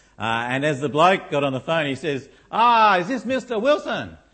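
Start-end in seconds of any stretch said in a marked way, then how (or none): 2.5-4.1 put-on botched Indian accent drifting Chinese, slow and high. Retelling a call-centre caller phoning a friend: put-on Indian accent, sounding Chinese. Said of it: "That's a Chinese one, maybe".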